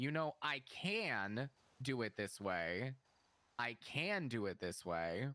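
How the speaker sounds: put-on slow condescending drawl, "can" stretched. Retelling what a coworker said in a talk: imitating a condescending tone. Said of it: "such a, like, condescending tone".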